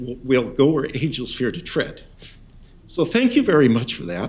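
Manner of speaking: moved, heartfelt, a little emotional. Speaker offers thanks during remarks, getting a little emotional. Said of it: "I get a little emotional".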